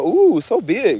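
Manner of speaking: put-on older woman's voice with a nice accent. Retelling how an older woman at the store spoke: imitating a woman's nice accent. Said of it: "an older woman that had a nice accent".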